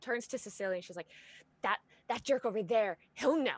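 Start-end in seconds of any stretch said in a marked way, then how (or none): 1.6-3.6 very angry, furious, louder and slower. A player voices her character Andrella turning to Cecilia: very angry. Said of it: "now she's just very angry".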